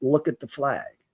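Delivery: faint, very quiet, almost half-whispered voice. Retelling a voice in their head while listening to a speaker: almost a half-whisper. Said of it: "it started off almost as a whisper".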